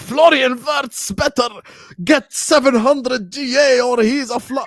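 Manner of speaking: very high, very slow, drawn-out yell. Quoting a man's claim from a football debate, retelling a shout. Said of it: "Why are you shouting?".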